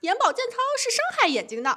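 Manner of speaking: mock, very high-pitched shouting. Quoting their husband shouting at the speaker's mother, retelling a shout. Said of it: "然后我老公就大叫说妈".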